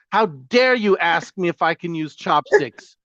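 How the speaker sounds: angry outburst. Retelling being asked about chopsticks in Japan: imitating own angry outburst. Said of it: "But I would get very angry".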